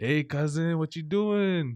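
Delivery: put-on broken-English accent. Describing how a group of people talks, imitating a broken English accent. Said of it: "we use it like a broken English accent".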